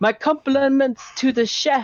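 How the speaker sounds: very loud, carrying voice. A woman smiles at Garrosh and looks toward the bar, in a loud, carrying voice. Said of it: "very loudly, um, you know, or in a carrying voice".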